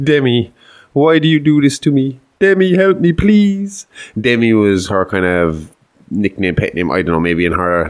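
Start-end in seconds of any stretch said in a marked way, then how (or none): 0.0-3.9 mock high-pitched, pleading, begging voice. Retelling a demon mimicking a mother's voice to a priest: imitating a begging plea. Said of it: "begging him for help and asking".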